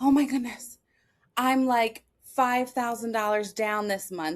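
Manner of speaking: alarmed, worried, panicked outburst. Retelling an early call to Dad about money: imitating own past panic. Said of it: "call Dad panic".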